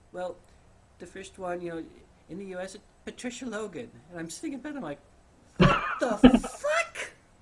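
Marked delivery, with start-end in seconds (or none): 0.1-3.9 put-on cute little voice, much higher pitch. Retelling an author naming her mentor, the speaker imitates her little adorable voice. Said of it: "she's got this little adorable voice".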